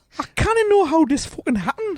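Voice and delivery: light Indian twang, very high-pitched. Voicing a quoted man's reaction, in a slight Indian accent. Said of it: "Slight Indian twang".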